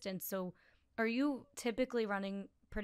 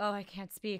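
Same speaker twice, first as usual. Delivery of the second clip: mock panting, out of breath. Retelling own words while running, imitating own panting. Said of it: "because I'm panting".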